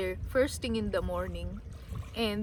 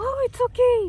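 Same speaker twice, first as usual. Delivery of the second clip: very high, very loud, kindly head voice; 14 semitones higher, 9 dB louder than usual. Retelling how someone answered an apology, imitating his kind head voice. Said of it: "he replied to me with a very kind head voice. Like".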